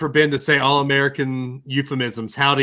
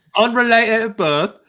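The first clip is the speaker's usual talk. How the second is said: put-on English accent, higher; 8 semitones higher, 3 dB louder than usual. Jokingly repeating a phrase: Mary Poppins-style English accent. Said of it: "your English accent is obviously inspired by Mary Poppins".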